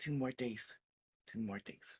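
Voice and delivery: under-the-breath, soft, hushed whisper. Retelling how he checked how many days were left: imitating someone whispering. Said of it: "you just hear him whisper".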